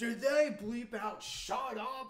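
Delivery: very high, very loud, slow, drawn-out shrill shout. Retelling a friend's reaction to a muted movie line: imitating Luke shouting. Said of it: "Luke is just shouting".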